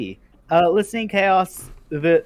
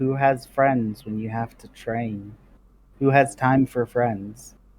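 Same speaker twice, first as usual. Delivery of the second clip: acted muttering, low and mumbled; 5 semitones lower than usual. Acting out a woman's lines as she talks to herself, muttering. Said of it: "She like mutters to herself".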